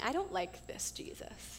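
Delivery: soft, whispered voice.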